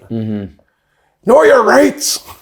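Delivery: put-on high, swooping Northern Irish accent. Imagine a union leader standing with the microphone, as Mick Lynch in a Northern Irish accent. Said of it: "Mick Lynch fucking standing with the microphone with that Northern Irish accent".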